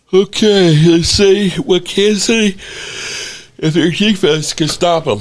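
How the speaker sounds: very high-pitched words stretched by a yawn. Previewing Kansas City's game, yawning while talking. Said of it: "Forgive me for yawning".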